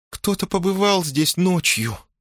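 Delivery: small, thin, scared, frightened, very high little voice. Narrating a novel, voicing a woman watching a man at an empty shelf, in a thin, frightened little voice. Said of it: "проговорила она тоненьким, испуганным голоском".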